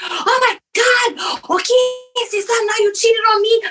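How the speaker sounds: very high-pitched, drawn-out outburst, losing control. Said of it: "je pète ma coche".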